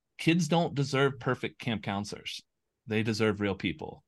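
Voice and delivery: ordinary talk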